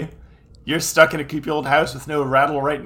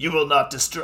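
strained put-on shouting voice. Acting out Seto's line from the scene: voice-wrecking Seto Kaiba impression. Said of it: "this is wrecking my voice".

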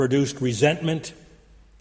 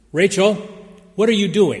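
stern, strict, trembling, raised voice with a quaver; 6 semitones higher, 5 dB louder than usual. A teacher demands to know what her most disruptive pupil is doing; stern trembling voice. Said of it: "in a stern trembling voice Mary demanded".

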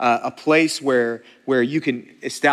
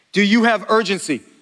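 booming, really loud, pitched-up voice; 7 semitones higher, 4 dB louder than usual. Addressing a gathering, really loud. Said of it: "I'm saying this really loud today".

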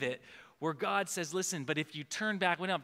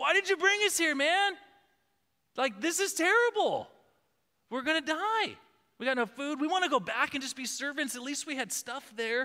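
very high, loud, frightened, terrified yell; 10 semitones higher, 5 dB louder than usual. Retelling the people's words to Moses at the sea: imitating terrified yelling. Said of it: "They're yelling at Moses".

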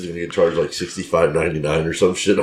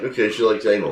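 ordinary delivery

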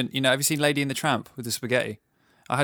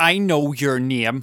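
put-on menacing, sinister Northern Irish accent; 4 dB louder than usual. Retelling what a man said after looking at the speaker, in a mock-sinister Northern Irish accent. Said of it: "In a sinister Northern Irish accent".

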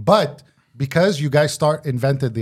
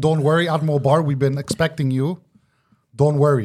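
normal talking voice

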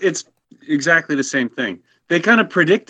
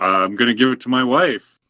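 ordinary talk, nothing marked

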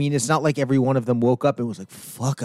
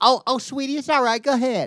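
put-on cashier voice, much higher and slower; 12 semitones higher than usual. Imagining what a cashier would say to someone inching out with jeans, in a Kohl's cashier accent. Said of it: "the Kohl's cashier / Waffle House waitress accent".

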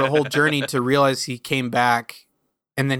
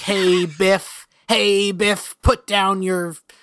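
timid nerdy put-on voice, higher pitch; 6 semitones higher than usual. Imitating a cartoon bat villain who sounds like George McFly: George McFly voice. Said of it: "George McFly from Back to the Future, who's like".

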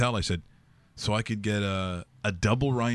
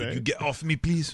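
pitched-up, polite voice; 6 semitones higher than usual. Retelling sitting on a gentleman's lap at a game: Jean-Claude Van Damme voice. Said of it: "He talks like Jean-Claude Van Damme".

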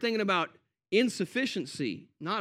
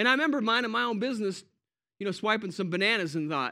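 normal talking voice

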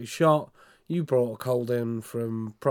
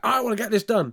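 put-on very high, cross, angry demanding voice; 10 semitones higher, 4 dB louder than usual. Retelling how customers who phoned up angry spoke: imitating an angry caller. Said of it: "phoned up angry".

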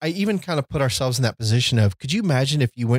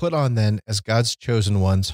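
ordinary talk

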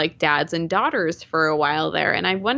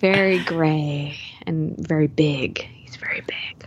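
gentle, soft, whispered ASMR voice; 3 semitones lower than usual. Describing a video game dad, slipping into an ASMR voice. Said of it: "Doing some ASMR voice there".

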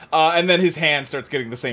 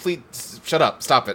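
ordinary delivery

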